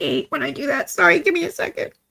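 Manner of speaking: choked up, tearful, high-pitched voice.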